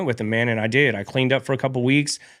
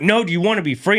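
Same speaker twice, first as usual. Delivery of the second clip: put-on insistent tone, high, pressing harder and louder; 7 semitones higher, 4 dB louder than usual. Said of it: "he just kept getting louder and louder".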